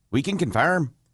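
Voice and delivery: a first, attempted try at an Irish accent. Reading out a quoted statement, in an attempted Irish accent. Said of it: "that's Irish, right?".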